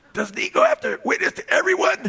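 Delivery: put-on tiny, scratchy little kid voice, very high. Retelling a family moment, the speaker quotes a little boy in Justice's little scratchy voice. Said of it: "in his little scratchy voice".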